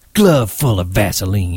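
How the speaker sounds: open disgust, contemptuous tone. Joining the attack on another man, he speaks disgustedly. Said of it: "he said disgustedly".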